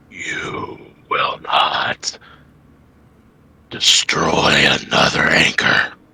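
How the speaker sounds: breathy whisper, deep and reverberant, echoing. A game master voices an unseen being with six glowing red eyes: deep voice vibrating the stone. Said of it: "this deep voice that seems to crack and vibrate the stone".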